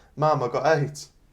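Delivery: put-on words sobbed through tears, crying wail. Retelling running downstairs to Mum after being hit on the head: imitating crying. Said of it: "gone running downstairs crying".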